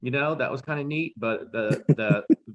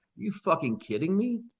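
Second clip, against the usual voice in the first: play-acted, high, incredulous, laughing through the words; 7 semitones higher, 3 dB quieter than usual. Retelling own reaction to a silly plot twist: retelling a disbelieving laugh. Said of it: "It was laughing like".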